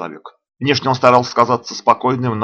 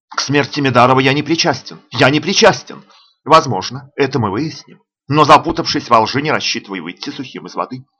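usual speaking voice

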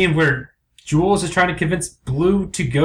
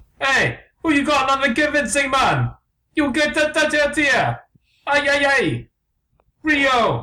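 unconvincing put-on Jamaican accent, very high; 10 semitones higher than usual. Told the accent is unconvincing, a character answers in an unconvincing Jamaican accent. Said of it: "A very unconvincing accents".

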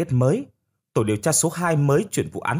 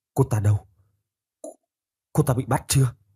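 shaky, frightened, trembling and quivering voice. A man questioned by Khải answers in a trembling voice. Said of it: "nói bằng giọng run run".

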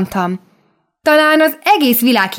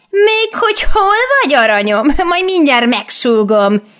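put-on old hag voice, high, mild yell; 5 semitones higher than usual. The old witch speaks to the little girl in the street; yelling. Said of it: "Üvöltött rám a vénboszorka".

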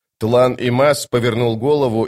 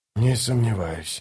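soft half-whispered voice; 6 dB quieter than usual. Reading a character's reply in a novel, half-whispered. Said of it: "прошептал он".

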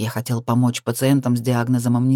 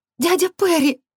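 very high, quavering, trembling cry. Reading a character crying out to her uncle as lights point at them, trembling cry. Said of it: "вскрикнула Лиза дрожащим голосом".

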